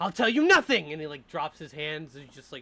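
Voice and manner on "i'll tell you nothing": very loud, pitched-up, defiant tone. A storyteller voices a character refusing to answer, defiant. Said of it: "looks up in defiance".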